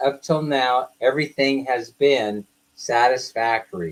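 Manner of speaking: ordinary talk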